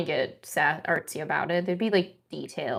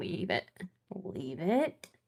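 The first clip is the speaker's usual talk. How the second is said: put-on soft scolding voice; 9 dB quieter than usual. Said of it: "They have some mom voice in there".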